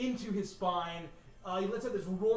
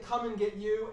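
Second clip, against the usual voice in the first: ordinary delivery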